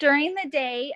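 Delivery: loud, projecting teacher voice.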